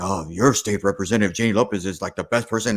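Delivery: homespun radio commercial pitchman announcer voice. Retelling a radio ad for a state representative: Blue Bell guy voice. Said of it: "sounds like the Bluebell guy".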